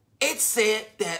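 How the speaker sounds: plain reading voice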